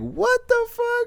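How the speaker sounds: high, slow, loud cry of shocked disbelief.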